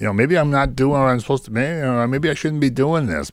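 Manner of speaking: fast, whining voice. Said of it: "Stop, stop whining".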